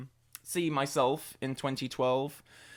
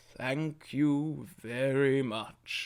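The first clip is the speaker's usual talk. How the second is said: very slow, deliberate, measured, drawn-out delivery. Retelling what he said while signing the book: imitating Moore's very slow way. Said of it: "just that very slow way".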